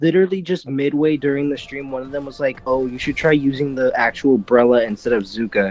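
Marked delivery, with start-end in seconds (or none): 2.7-5.7 mock snide, sarcastic manner. Retelling what a streaming player said mid-match: imitating a sarcastic tone. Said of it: "in, like, a sarcastic kind of manner".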